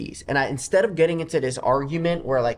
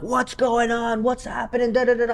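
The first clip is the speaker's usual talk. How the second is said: acted, full-on, high-pitched screaming; 10 semitones higher than usual. Storyteller reenacts standing on a chair at the hotel, retelling a scream. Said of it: "I just start screaming".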